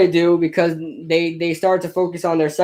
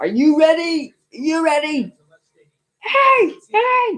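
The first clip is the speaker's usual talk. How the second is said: very high, very slow, drawn-out acted screaming yell; 11 semitones higher than usual. Mocking a quarterback's screaming voice during a game stream: imitating Tom Brady screaming. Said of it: "most annoying voices when he screams".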